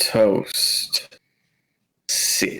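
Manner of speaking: deep, breathy, smooth whisper, slight twang at end. Telling a story, the speaker gives a dog a command in a Soul Train deep voice. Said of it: "like Soul Train deep voice".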